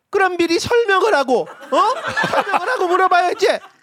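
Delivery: irritated, exasperated. Retelling what the mother said after hearing the explanation: imitating mom's irritated reply. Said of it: "하고 짜증을 내셨어요".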